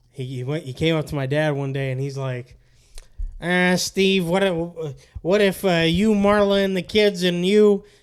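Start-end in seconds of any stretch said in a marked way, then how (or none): 3.4-7.8 put-on older man's voice, higher and louder. Retelling what an older delivery worker said to dad: imitating Tom's voice. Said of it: "I remember the voice very vividly".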